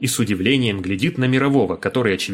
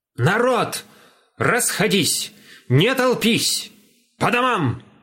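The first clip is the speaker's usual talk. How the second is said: rasping, hoarse, angry, very high yell; 10 semitones higher than usual. A narrator voices a man shouting at gathered peasants out of habit, in a hoarse angry shout. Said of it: "кричит хриплым, сердитым голосом".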